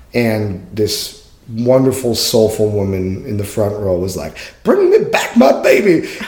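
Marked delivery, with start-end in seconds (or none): 4.7-6.1 very high, all-out, full-lung holler. Retelling a woman in the front row interrupting a show, retelling a full-lung yell. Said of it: "She yelled it at the top of her lungs".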